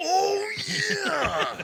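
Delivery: very high, loud, put-on wrestler-style shout. Imagining a bush jumping out, shouting like Macho Man. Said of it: "start shouting like Macho Man".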